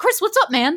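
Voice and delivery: high, loud, casual, easygoing host-style voice. Greeting Chris in imitation of the usual host: Eduardo impression. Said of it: "I'm gonna do my best Eduardo impression".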